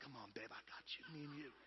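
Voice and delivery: put-on intense encouraging tone. Describing men cheering on their wives: imitating intense encouragement. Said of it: "They're intensely looking at her and going".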